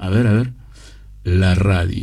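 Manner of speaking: put-on very deep voice. Try out how the man says "la radio", using your lowest notes, in a very deep Eduardo Aliverti voice. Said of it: "Yo estoy también usando mis notas más graves".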